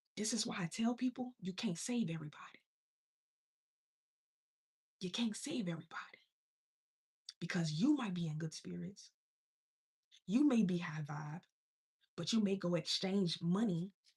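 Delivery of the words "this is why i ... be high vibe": hushed half-whisper, under the breath. Telling listeners something that might be a secret, half-whispering. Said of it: "I'm whispering for a reason".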